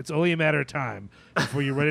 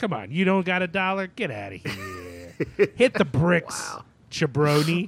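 fake 1920s Chicago gangster accent; 4 semitones higher than usual. Doing a Patreon ad bit, in a fake Chicago accent. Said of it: "Is this your weird Chicago talk now?".

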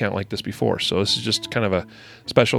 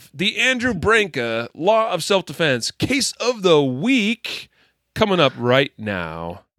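animated, lively broadcaster voice; 9 semitones higher than usual. Announcing the show's next segment: animated broadcaster voice. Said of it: "we gotta be, like, animated stuff".

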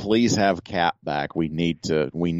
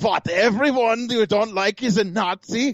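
fake German accent, pitched way up. Recalling what a man was saying that you found really funny, repeat it in a fake german accent. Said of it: "in that German fake accent".

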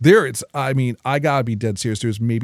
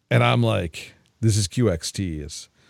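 ordinary delivery

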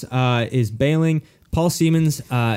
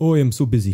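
put-on, busy-sounding complaining tone. Imitating Ezra complaining about being busy: imitating Ezra. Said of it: "Perfect impression".

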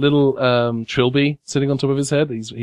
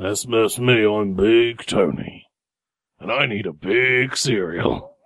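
put-on voice of a large fat creature; 3 semitones lower than usual. Voicing a very large fat adipose who opens the door: Big Tony voice. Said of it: "and it says".

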